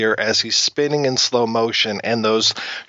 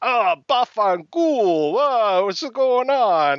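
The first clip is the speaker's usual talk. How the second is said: put-on Italian gangster accent, slow and high; 10 semitones higher than usual. Describing the Punisher's introduction scene, imitating the gangster: stereotypical Italian gangster voice. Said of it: "the most stereotypical Italian gangster ever".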